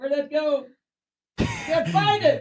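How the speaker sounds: shouting away from microphone. Searching through notes away from the microphone: yelling away from the microphone. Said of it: "you're still yelling to make sure that you're going through the microphone".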